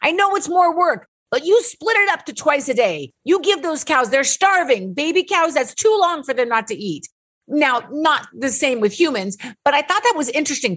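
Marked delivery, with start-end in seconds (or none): 0.0-7.1 put-on Polish accent in English. Speaker retells what a man told him, in his Polish accent. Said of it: "in his Polish accent".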